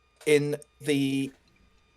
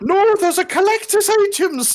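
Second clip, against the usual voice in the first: high, loud bad mock Irish accent. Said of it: "Doesn't sound very Irish".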